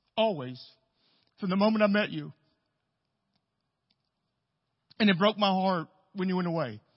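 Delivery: heartfelt, emotion welling up. Speaker addressing his returning friend Randy in front of everyone, getting emotional. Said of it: "I'm going to get emotional".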